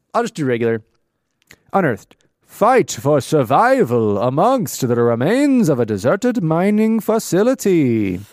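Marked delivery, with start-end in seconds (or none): 1.7-8.2 slow vampire voice, every word drawn out. Reading a dramatic voice-over line after trying other accents: Count Dracula voice. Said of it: "Count Dracula, for that amazing rendition".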